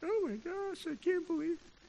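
very high, wailing, sobbing ugly cry. Retelling getting caught with snap pops at school as a kid: acting out ugly crying. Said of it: "Ugly crying".

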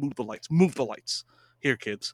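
fed-up, short-tempered, angry, pissed off. Telling a story about an actor grabbing a ladder: imitating angry Philip Seymour Hoffman. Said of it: "was pissed off".

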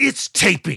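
hostile, aggressive, dismissive delivery. Describing how one character delivered a line to another, imitating a hostile retort. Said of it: "He comes at him so hard".

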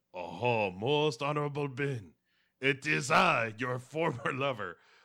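bad French accent, high and loud. Recapping a scene, the speaker voices Catherine addressing Ben in an accidental French accent. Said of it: "I don't know why that went French all of a sudden".

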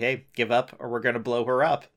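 plain

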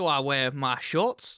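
bad put-on Australian accent. Acting out an Australian deciding whether to wear shorts: bad Australian accent. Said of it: "I normally do an okay Australian accent".

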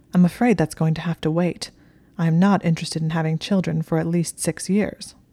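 ordinary delivery

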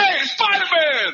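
screaming. Recalling a guy on the street calling out to Spider-Man: imitating a New Yorker screaming. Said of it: "that New Yorker screaming at him".

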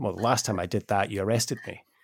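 mock flat, deadpan delivery. Retelling a man's answer to a police officer, imitating his deadpan delivery. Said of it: "totally deadpan".

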